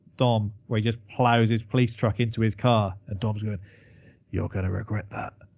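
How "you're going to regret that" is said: put-on under-breath mutter, much quieter, lower pitch. Describing a scene where Hobbs rams Dom's car, retelling a mutter under breath. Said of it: "under his breath".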